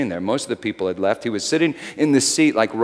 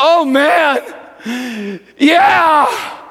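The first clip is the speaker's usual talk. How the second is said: tearful, pitched-up moan; 7 dB louder than usual. Retelling how a sobbing man answered an offer of prayer, retelling a moan. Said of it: "he just moaned".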